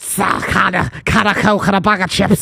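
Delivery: put-on Liverpool accent. Trying out a Scouse accent in a chat about accents, Scouse accent. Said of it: "that's a horrible one".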